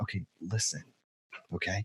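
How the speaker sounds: hushed, very quiet, steady whisper. Retelling calming yelling people at a domestic call: imitating own whisper. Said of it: "I'll actually start to whisper".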